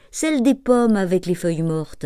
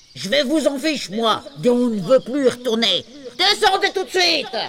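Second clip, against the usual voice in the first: big, pitched-up, furious angry dad voice; 6 semitones higher than usual. A narrator reads a father ordering his seven children down from a tree: big angry dad voice. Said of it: "Cette grosse voix de papa en colère".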